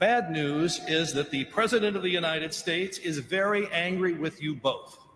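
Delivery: ordinary talk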